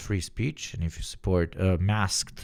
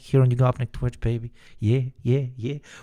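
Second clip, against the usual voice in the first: mock British accent, higher; 5 semitones higher than usual. Hyping up the Twitch chat: put-on British crack dealer voice. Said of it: "talking like a fucking British crack dealer".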